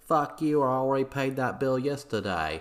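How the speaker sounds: fake Boston accent, Australian drift. Narrating a quarrel in Boston, voicing the accused man's reply in a fake Boston accent. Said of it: "my fake Boston accent sounds like some kind of Australian bogan accent".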